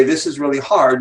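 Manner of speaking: normal talking voice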